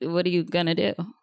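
plain

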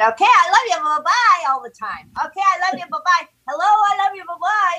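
put-on high-pitched little-girl voice. Retelling what the next door neighbor kid always said: high-voiced neighbor girl imitation. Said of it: "the high voice neighbor girl".

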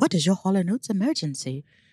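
put-on little English lady voice with English accent. Describing a Hall & Oates hotline message, doing its English lady voice. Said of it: "a little English lady that goes".

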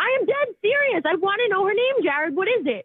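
very high, agitated, insistent worked-up delivery. Demanding on a phone call to know her name: worked up. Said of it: "you need to calm down".

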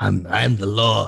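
very slow, creaky, rough tough-lawman delivery. Doing Jason Statham playing Judge Dredd: Jason Statham as Judge Dredd. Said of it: "That's Jason Statham as Judge Dredd".

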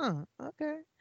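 high, soft, unimpressed aside. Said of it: "and I was kinda like".

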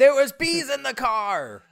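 shrill, very high, very loud, drawn-out slow panic. Guessing the missing line, quoting a movie's bee scene: imitating Tommy Boy bee panic. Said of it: "kinda like a Tommy Boy moment".

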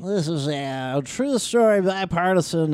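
put-on sports announcer voice. Joking that the podcast is true stories only: Harry Caray voice. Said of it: "when you do that voice".

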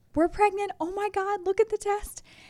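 thrilled, super excited outburst, pitched way up. Retelling opening the shower curtain to share a positive test: imitating own past excitement. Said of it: "super excited".

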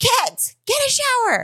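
play-acted, very high, swooping yell. Retelling how the other person yelled at the kids from a chair: imitating someone yelling at kids. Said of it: "you start yelling at the kids".

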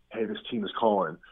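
hushed whisper. Retelling what the agent tells him when a team calls: imitating a whisper. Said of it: "he kinda whispers to me".

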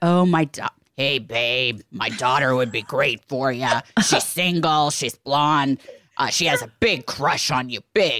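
slow, drawn-out fatherly voice. Retelling what her dad might have said, imitating her dad's voice. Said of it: "I've ever heard you imitate your dad".

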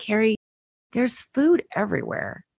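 hushed, quiet, softly spoken. Recounting what a man said to you, retelling a quiet remark. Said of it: "he said it really quietly".

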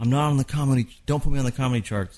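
mock screaming, shouting. Recounting a past argument, retelling a scream. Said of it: "I was screaming like".

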